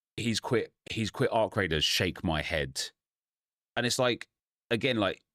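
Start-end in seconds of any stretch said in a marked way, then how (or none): none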